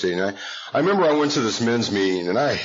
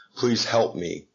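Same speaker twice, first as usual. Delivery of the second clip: put-on crying, tearful pleading. Retelling asking a sponsor for help: retelling a tearful plea. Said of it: "I kinda crawled in just these alligator tears".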